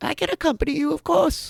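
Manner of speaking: shrill, very loud, very high chirpy bird voice. Voicing a bird that chirps back at you, chirpy bird voice. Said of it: "chirps back at you in its regular bird voice".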